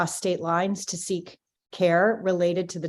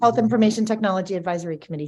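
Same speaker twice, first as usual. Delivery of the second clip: very fast, rapid-fire, rattled-off delivery; 4 dB louder than usual. Confirming a committee's name after being congratulated, very fast. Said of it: "You said that very quickly".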